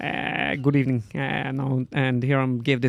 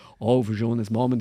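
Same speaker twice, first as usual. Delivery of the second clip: hard, gravelly put-on voice, pushed out; 3 semitones lower than usual. Showing the voice done with a dry morning throat: Jürgen Klopp impression. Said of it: "when I do Klopp".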